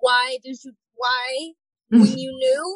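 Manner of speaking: loud, tearful, sobbing, accusing ranting tantrum. Retelling a week of tantrums, being like this: retelling a crying tantrum. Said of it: "just crying and being like".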